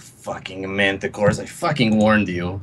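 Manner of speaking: low mutter under breath. Voicing a character after throwing a fireball: muttering under breath. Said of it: "I just mutter under my breath".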